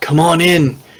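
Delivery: loud, high-pitched yell. Voicing a soldier calling others in through the front door: yelling. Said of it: "walks back out halfway out the front door and yells".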